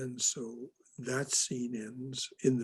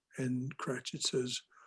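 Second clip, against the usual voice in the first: ordinary delivery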